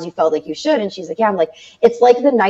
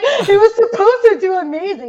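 put-on tearful sobbing wail, very high; 13 semitones higher than usual. Retelling going to Jason after a launch fell flat: imitating own past crying. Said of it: "and I'm crying".

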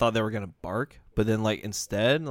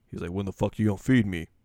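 very deep put-on dog voice. A speaker retells what Kogi said, doing Kogi's really deep voice. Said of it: "Kogi had a deep ass voice, like really deep".

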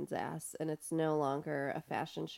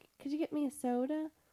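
very high put-on fake voice; 11 semitones higher than usual. Recalling a scene from the episode, imitating Daria pretending to be Quinn. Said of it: "Remember the voice that she made where it was like".

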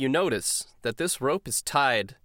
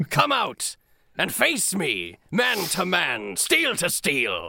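threatening pirate captain voice, higher; 5 semitones higher than usual. Voicing a squid pirate captain drawing a cutlass: menacing pirate voice. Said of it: "he pulls from his coat a cutlass".

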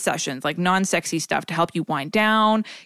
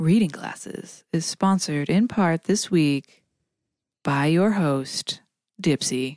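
seductive, sultry, sexy on-air announcer voice; 3 semitones lower than usual. A podcast host reads the sponsor credit, in a sexy radio voice. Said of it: "That was my sexy voice".

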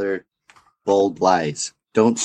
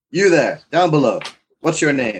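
gruffly called out, pitched up; 6 semitones higher than usual. Banging a walking stick on a trapdoor, calling to someone below; gruff call. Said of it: "I call out gruffly".

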